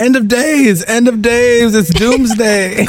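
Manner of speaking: mock very high-pitched, frantic shrieking. Retelling how a principal turns the corner: imitating Ava screaming.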